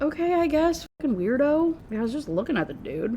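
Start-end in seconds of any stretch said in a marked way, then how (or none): 0.0-1.7 high, dismissive, tossed-off brush-off. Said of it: "She's like".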